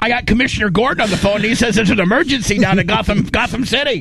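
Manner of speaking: high, fast, hurried speech.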